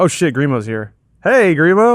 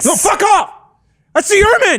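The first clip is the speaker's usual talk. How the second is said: screaming, yelling, higher in pitch; 14 semitones higher than usual. Playing a paranoid character refusing to share mints: screaming in character. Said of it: "Why are you screaming?".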